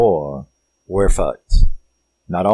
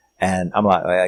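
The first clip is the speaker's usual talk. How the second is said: normal talking voice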